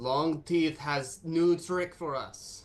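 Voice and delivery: slow, loud, high yelling.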